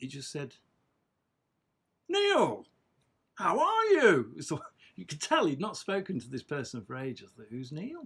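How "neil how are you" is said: big booming voice, very high, very loud, drawn-out. Speaker recalls Dad taking a phone call, imitating his big booming voice. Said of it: "big booming voice".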